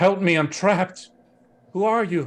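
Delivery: very high begging plea. Voicing a woman who appears from behind a corner: trapped woman begging for help. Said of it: "a beautiful woman ... she's like".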